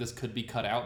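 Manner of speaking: ordinary talk, nothing marked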